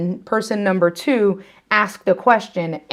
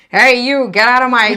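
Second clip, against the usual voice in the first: put-on loud, cranky elderly old-timer voice; 3 semitones higher, 5 dB louder than usual. Showing how they'll sound when they're old, in an old person voice. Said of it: "That's what I'm gonna sound like when I turn old".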